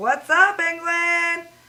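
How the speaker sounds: fake, cool New York American accent. Showing how they would greet England: put-on New York accent. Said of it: "talk like this now".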